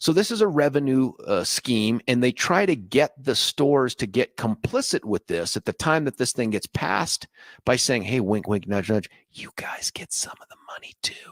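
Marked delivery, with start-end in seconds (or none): 8.0-11.3 sly, hushed, conspiratorial whisper. Acting out the pitch to the stores in a mock conspiratorial whisper. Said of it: "I know every time I whisper".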